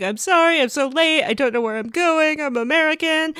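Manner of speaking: high, upset, tearful voice, crying through the words. Retelling how Vanessa answered a cop who pulled her over: imitating Vanessa crying. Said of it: "Vanessa was upset and crying and was like".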